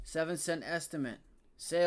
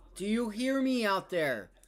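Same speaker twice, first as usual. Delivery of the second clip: full-on, loud, high-pitched yelling; 4 semitones higher, 4 dB louder than usual. Stock commentator warns his audience he's going to yell, then yells. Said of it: "Sorry, I'm going to yell".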